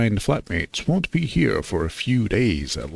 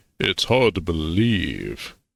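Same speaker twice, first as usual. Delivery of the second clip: low pitch, slow pace; 4 semitones lower than usual. Player voicing his character after being asked for his Chad voice, as Nathan Fillion. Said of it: "Your totally Chad voice".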